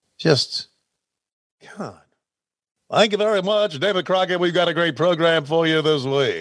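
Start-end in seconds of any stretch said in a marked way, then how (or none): 2.9-6.4 fake, phony put-on radio announcer voice. Mocking how phony his own past broadcast voice was, in a phony announcer voice. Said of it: "how fucking phony my voice was".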